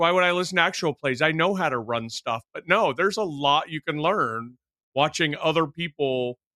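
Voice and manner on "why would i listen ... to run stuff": usual speaking voice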